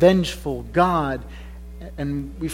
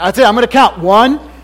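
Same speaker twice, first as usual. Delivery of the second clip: loud, booming, stern strict dad voice; 7 semitones higher, 12 dB louder than usual. Retelling how he warns his girl, in his dad voice. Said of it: "When my dad voice comes out".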